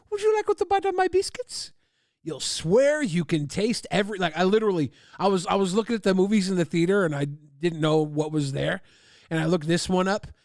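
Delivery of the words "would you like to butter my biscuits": put-on French woman's accent, very high-pitched. Quoting a line from a movie seen in the theater, French woman accent. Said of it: "You like my French accent, my French woman accent?".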